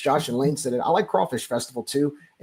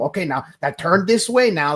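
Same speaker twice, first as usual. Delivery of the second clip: awful put-on old Cajun man's accent; 4 semitones higher, 3 dB louder than usual. Imitating an old man teaching a dancing partner: imitating a Cajun accent. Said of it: "Don't ever do a Cajun accent again".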